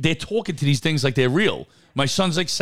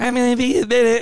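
put-on voice, disguised by voice changer, pitched up; 7 semitones higher, 4 dB louder than usual. Answering while on the toilet that you'll be a minute, in a disguised voice. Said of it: "Or a voice changer. You ever see like a voice changer?".

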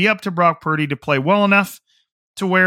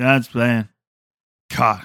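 low, dead bored droning monotone; 5 semitones lower than usual. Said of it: "I could say that in an extremely uninteresting, boring, monotone".

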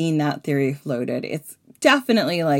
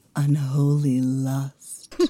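deep, dark, sexy whisper, much lower; 3 semitones lower than usual. Telling a myth to listeners, a deep, sexy, dark whisper. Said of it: "whisper to you in that deep".

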